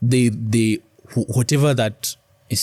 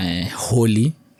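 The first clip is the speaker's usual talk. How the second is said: ordinary talk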